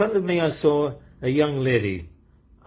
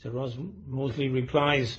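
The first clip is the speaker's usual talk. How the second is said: ordinary delivery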